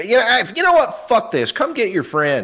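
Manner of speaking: put-on angry yell. Telling a story, the speaker quotes Darby yelling at his buddies, retelling Darby's angry yell. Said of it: "He yells at his buddies".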